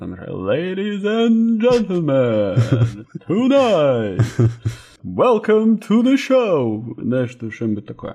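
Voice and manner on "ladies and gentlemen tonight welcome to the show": ceremonial boxing announcer voice, very slow and grand. Opening their podcast, the host tries a ceremonial intro: boxing ring announcer voice. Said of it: "как будто боксеров представляют".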